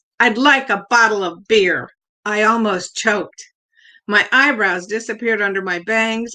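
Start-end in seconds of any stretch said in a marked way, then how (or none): 0.2-1.9 as if through a megaphone. Narrator retells their little darling's reply about a drink, in a megaphone voice. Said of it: "in her megaphone voice".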